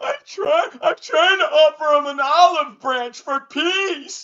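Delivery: put-on high, loud, whiny blubbering cries. Mocking the man who offered to fight you, imitating Stupid Lane crying and whining. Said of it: "crying, whining".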